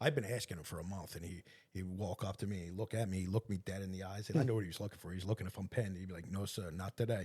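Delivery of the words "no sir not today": put-on light Spanish accent, much slower. Recounting how Juan kept refusing to let him in; imitating Juan's Spanish accent. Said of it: "spoke in this little Spanish accent".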